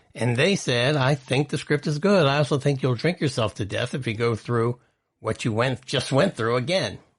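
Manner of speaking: usual speaking voice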